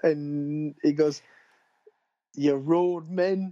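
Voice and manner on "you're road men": put-on high-pitched Geordie accent. Quoting an actor's line from a favourite film scene, imitating a shouted Geordie accent. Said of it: "you can just hear his Geordie accent coming through".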